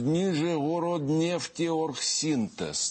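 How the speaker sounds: high, slow, drawn-out, careful enunciation.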